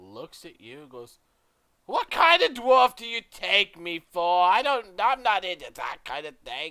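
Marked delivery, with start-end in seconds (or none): 1.9-6.7 wary, suspicious dwarf voice, very loud and high. Voicing a dwarf shopkeeper offered extra gold: suspicious dwarf shopkeeper voice. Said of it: "she eyes the gold suspiciously".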